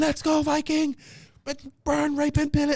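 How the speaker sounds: mock, very high, high-pitched screaming cheer. Retelling cheering on top of a Connex during a race: imitating own screaming. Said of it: "Connex screaming".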